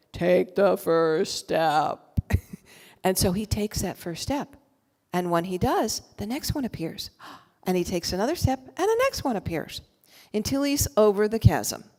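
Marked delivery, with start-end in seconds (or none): 0.1-1.9 low, very slow, drawn-out tiny creature voice. Tell the story of a man at a bridgeless chasm who hears a little Yoda voice. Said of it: "this little Yoda voice going".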